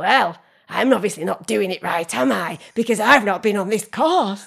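play-acted huffy, sulky, stroppy retort, very loud. Retelling a family barbecue argument, a wife imitates her husband in a stroppy voice. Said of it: "in like a stroppy voice".

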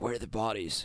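deep, dropped masked vigilante voice.

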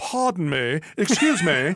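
best-effort put-on English accent. Giving advice on politely jumping in, then doing it in an English accent. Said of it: "I am giving you my best English accent".

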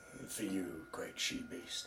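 very quiet, swooping whisper under the breath. Declaring an in-character aside after rousing a crowd: whispering under breath. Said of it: "whisper under my breath".

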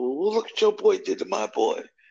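rough high-pitched yelling. Retelling a childhood fight, the speaker voices the other boy's mother: imitating someone yelling. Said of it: "she's yelling at my mother".

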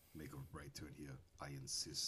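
very low put-on voice, dropped right down. Imitating the Arnold Schwarzenegger navigation voice: Arnold Schwarzenegger voice. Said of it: "The Arnold one is hilarious. He says that".

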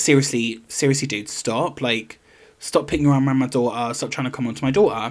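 plain

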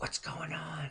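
soft, unvoiced, close whisper.

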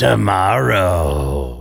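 drawn-out, croaking creature voice. Narrator reads the crawling thing turning back at the room's door, in a croaking voice. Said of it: "it croaks out".

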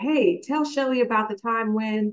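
usual speaking voice

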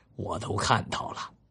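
ordinary talk

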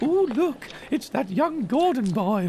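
put-on very high, slow Scottish accent. A woman spots the young Gordon boy, Scottish accent. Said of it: "although she's doing it in a Scottish accent".

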